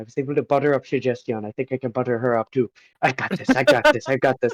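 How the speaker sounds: spoken to oneself, psyching oneself up. Retelling what the speaker said to themself at the time, hushed tone. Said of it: "kind of like in a, a hushed tone".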